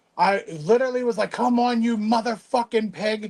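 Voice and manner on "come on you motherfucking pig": mock furious all-out yell at top of lungs. Retelling struggling with a wrench, reenacting screaming to the top of the lungs. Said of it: "I'm screaming to the top of my lungs".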